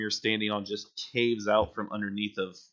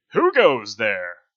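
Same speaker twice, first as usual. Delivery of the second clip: big, very loud, booming voice; 10 dB louder than usual. In a role-play, a character challenges whoever comes in: big booming voice. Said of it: "you just hear this big booming voice".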